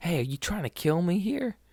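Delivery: play-acted, very high-pitched shrieking outburst. Retelling a man at a register: imitating a man screaming.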